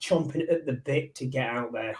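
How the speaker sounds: usual speaking voice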